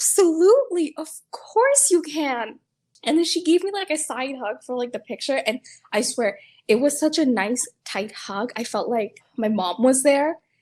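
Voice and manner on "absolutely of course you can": high, loud, swooping, drawn-out sing-song. Recalling asking a woman for a picture, the speaker quotes her reply: imitating Sandy's high-pitched voice. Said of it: "her voice was so high pitched".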